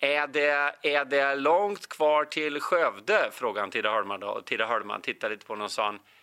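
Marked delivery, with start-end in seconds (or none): 0.0-3.3 put-on Stockholm Swedish accent. Retell a Stockholmer's question to a fellow passenger on the train, in an attempted Stockholm accent. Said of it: "Nu kan jag försöka härma stockholmska".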